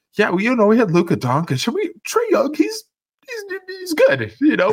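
put-on pained tone. Speaker imitates what the person they're talking to said, mock pained voice. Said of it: "I can hear the pain in your voice when you said".

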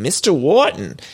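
rough attempt at a Boston accent. Retelling the boyfriend saying the wrong name: imitating a Boston-y accent. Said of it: "a Boston-y accent".

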